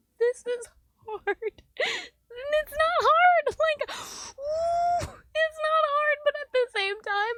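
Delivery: wailing through tears, very high and loud. Talking to the camera about hard feelings, crying while talking. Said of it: "why am I crying?".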